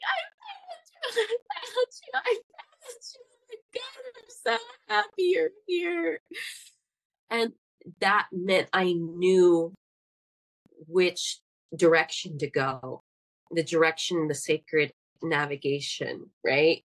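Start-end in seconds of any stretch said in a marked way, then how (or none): 0.1-6.2 mock sobbing, voice very high and tearful. Retelling finding their grandmother tree and hugging it: retelling own crying. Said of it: "and I was just like crying".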